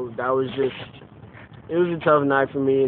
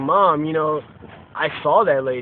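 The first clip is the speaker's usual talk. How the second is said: ordinary talk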